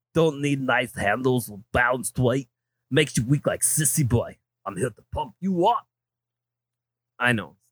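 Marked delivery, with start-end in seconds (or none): 0.1-5.8 thick, exaggerated strongman Austrian accent. Rereading an ad aloud, the speaker tries it as an Arnold impression. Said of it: "should I read that in more of an Arnold?".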